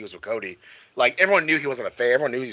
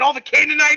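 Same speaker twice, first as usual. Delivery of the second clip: put-on pumped-up wrestler shouting, higher and louder; 7 dB louder than usual. Retelling a wrestler's backstage promo, imitating Kane pumped up. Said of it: "so pumped up".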